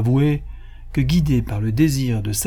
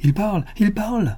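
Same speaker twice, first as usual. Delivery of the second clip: delighted, overjoyed cry, pitched up; 9 semitones higher than usual. The princess claps as the parrot finally speaks, overjoyed cry. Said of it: "s'écria la princesse, transportée de joie, en battant des mains".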